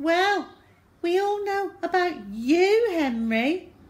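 very high, sour tone. Narrator reads a character replying to a taunt, sourly. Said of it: "said Susan sourly".

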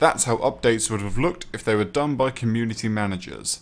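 ordinary talk

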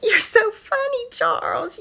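high sobbing, with forced pretend laughter.

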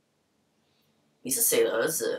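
put-on slow, thick Taiwanese accent.

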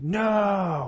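high, wailing, dismayed cry.

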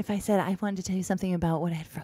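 hushed whisper. Showing how much more important things sound when whispered: whispering. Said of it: "a lot more important sounding if you whisper".

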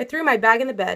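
ordinary delivery, nothing marked

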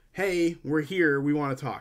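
ordinary delivery

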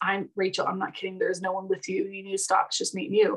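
mock-emotional, teary voice. Retelling what she said after turning toward the doorway, imitating someone tearing up. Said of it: "She kind of teared up and got emotional".

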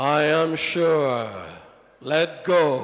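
booming, very deep, very slow divine voice. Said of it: "why God always has to talk in that voice".

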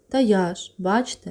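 sighing while speaking. The sick narrator answers a woman asking who ate breakfast; sighing. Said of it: "зітхнув я".

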